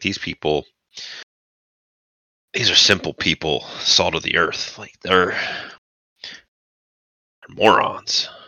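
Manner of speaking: voice dropped to a whispered aside. Retelling a character describing the townspeople, dropping his voice. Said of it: "just drops his voice like".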